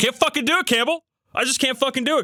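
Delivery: high, strained, exasperated outburst.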